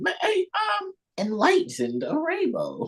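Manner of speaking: very high, sing-song, swooping, fake mock-sincere voice. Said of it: "it comes off so genuine".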